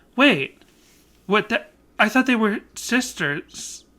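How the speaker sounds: baffled, clueless aunt voice. Acting out a bit while watching a commercial: confused aunt character voice. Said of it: "like the character of an aunt who doesn't even understand".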